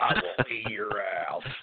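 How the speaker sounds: rough, gravelly, rasping voice. Imitating an animated man he describes, doing his gravelly voice. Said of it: "And he just gets so gravelly".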